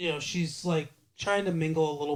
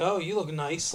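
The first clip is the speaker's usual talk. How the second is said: put-on sarcastic tone. Retelling a scene where a mom speaks to her daughter, imitating sarcastic mother. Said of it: "like sarcastically".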